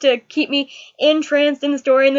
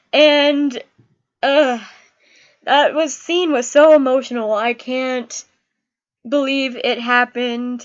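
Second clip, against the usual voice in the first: ordinary talk, nothing marked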